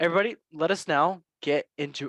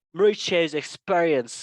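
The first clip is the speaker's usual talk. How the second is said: badly done put-on British accent; 3 dB louder than usual. Quoting what Chelsea's sporting directors said, in a bad put-on British accent. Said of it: "they probably have a British accent. I'm gonna go with that".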